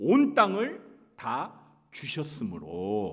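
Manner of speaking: slow, loud, solemn, emphatic, stamped declamatory tone.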